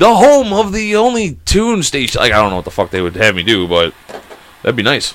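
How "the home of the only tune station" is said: very high-pitched radio disc jockey announcing voice. Showing off a voice good for a disc jockey gig, in a radio DJ voice. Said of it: "my voice is like pretty good for doing like a disc jockey thing".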